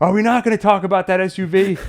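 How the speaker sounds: loud, high yelling. Describing watching a movie, the speaker retells their own yell. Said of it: "I'm yelling at the theater like".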